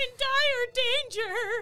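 piercing, shrill scream, very loud and long. Role-playing their character in danger, screaming. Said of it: "you're screaming the whole time".

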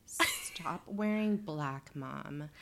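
put-on rich-kid drawl. Mocking how a girl talks to her parents, imitating a rich kid drawl. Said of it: "rich kid drawl".

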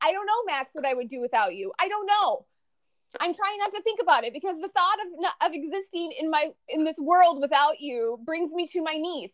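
usual speaking voice

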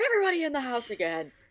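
sudden, high-pitched screaming outburst. Retelling dropping a smoothie on the way into the car: retelling own screaming. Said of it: "and I just like start screaming".

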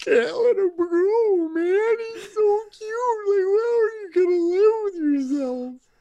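very high-pitched bawling, sobbing voice. Retelling his own reaction to a Pixar movie, imitating bawling. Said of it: "just bawling my eyes out and going".

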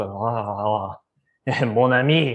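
low, very slow, drawn-out character voice. Voicing a beer that answers a player's forked tongue: voicing a talking beer. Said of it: "The beer ju-, just answers with".

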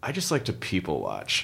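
low, hushed, smug, superior, arrogant tone. Mimicking what a certain kind of person says to you, in a mock-arrogant tone. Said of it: "in kind of an arrogant tone".

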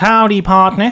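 attempted, put-on Tennessee country accent. Asked on the show for a Tennessee accent, trying one out: Tennessee accent. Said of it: "Do you have a Tennessee accent?".

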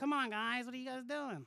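put-on loud, laid-on, cheesy New York accent. Criticizing an actor's take on Penguin by imitating him, in Penguin's cheesy New York accent. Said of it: "He did like this cheesy New York accent".

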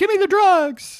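very high, squeaky, loud put-on disguised voice. Showing how to disguise a voice by going high, high disguised voice. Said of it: "You have to go high".

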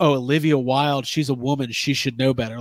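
ordinary talk

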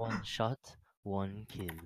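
put-on French accent. After a one-shot kill in the game, saying it in a Widowmaker accent. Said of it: "With that accent".

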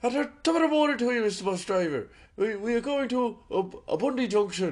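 put-on Irish accent. Retelling greeting a bus driver alongside a mate, put-on irish accent. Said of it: "speaking like Irishmen".

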